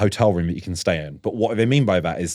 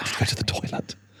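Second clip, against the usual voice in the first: mock hushed whisper, quieter. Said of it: "I find I talk in a hushed whisper".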